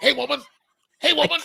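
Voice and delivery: rough, high, loud tough-guy holler. Joking about visiting the Rocky statue: Clubber Lang impression. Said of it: "I would start doing, uh, Clubber Lang's".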